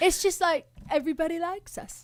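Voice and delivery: high, put-on Australian accent. Speaking as the band from Australia about everybody liking them; Australian accent. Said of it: "Here's my Australian accent".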